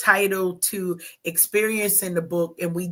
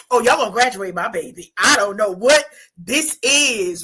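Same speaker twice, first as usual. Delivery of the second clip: loud, combative, fired-up voice charging in, ready to fight; 7 dB louder than usual. Imagining being an auntie coming up about a failing student: acting as an auntie ready to fight. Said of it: "I'm the auntie, I'm coming".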